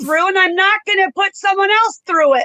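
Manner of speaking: high, loud shouting. Someone refusing to answer an interviewer's question, shouting. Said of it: "Do you feel there's a reason to shout your answers?".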